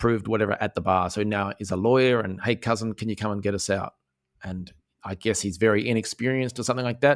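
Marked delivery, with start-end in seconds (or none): none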